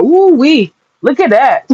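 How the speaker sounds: mocking words broken up by cackling laughter. Retelling how they react alone while watching: imitating own cackling laugh. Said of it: "I just be cackling and laughing like".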